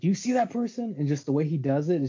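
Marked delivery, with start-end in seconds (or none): 0.0-1.0 very high, jumpy, raised paranoid outburst. Discussing a film, speaker imitates the actor's paranoid character; imitating a raised voice. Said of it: "he kind of raises his voice and is like".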